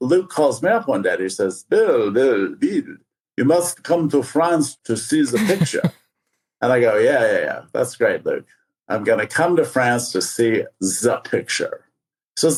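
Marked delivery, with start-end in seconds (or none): 1.6-5.9 horrible fake French accent. Retelling a phone call inviting him to France, horrible French accent as Luke. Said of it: "This is a horrible French accent".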